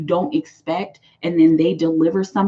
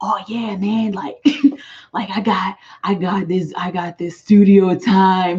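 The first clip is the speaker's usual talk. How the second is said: acted, slow, swaggering, big-talking boastful voice. Imitating the type of person who talks big game: imitating someone talking big. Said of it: "talking big game".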